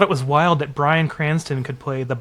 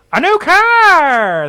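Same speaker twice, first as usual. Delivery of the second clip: shrill, very loud, very high game show announcer voice; 8 dB louder than usual. Retelling how the game show announcer always said it: announcer voice. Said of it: "they always had the same voice for the announcer".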